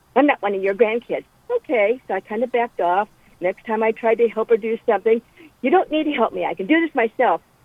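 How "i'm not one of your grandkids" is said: put-on snarling voice. Retelling what a lady said when offered help, imitating a snarl. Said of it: "she snarled at me".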